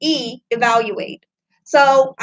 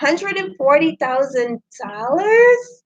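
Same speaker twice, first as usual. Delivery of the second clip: pitch rises at the end on dollars. A number that comes out sounding like a question, rising at the end on dollars. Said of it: "it comes out like this, ... it sounds like a question".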